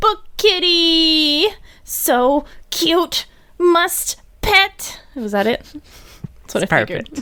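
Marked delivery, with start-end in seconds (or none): 0.0-5.0 put-on very high, very slow little-kid voice. Guessing how he sounds: imitating a child's voice. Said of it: "good at imitating a child".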